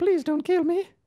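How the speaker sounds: very high, pleading little London voice. Retelling a movie scene, the kid pleading with Drax, in an Oliver Twist accent. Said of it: "Oliver Twist accent".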